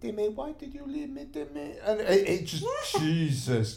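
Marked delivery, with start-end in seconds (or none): 0.0-1.8 very high, hushed, soft motherly voice. Recalling last week's show, a speaker quotes a voice, imitating Karis's mum. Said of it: "doing Karis's mum's voice".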